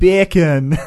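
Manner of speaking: bacon belted out loudly in Jamaican accent. Testing a claim about how a word sounds, bacon in a Jamaican accent. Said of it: "if you say the word bacon in a Jamaican accent".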